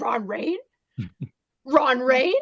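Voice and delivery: high, swooping cartoon dog voice. Retelling a cartoon scene, imitating Scooby-Doo suddenly brave. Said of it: "he's like".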